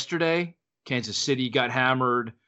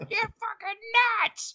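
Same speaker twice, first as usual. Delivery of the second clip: imitated woman yelling, higher pitch. Retelling the speaker's wife yelling from inside the house: imitating wife yelling. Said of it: "yelling at me from inside the house".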